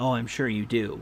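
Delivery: dry, knowing, sarcastic tone. A game master voices a character answering a player, sarcastic. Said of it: "He sarcastically says".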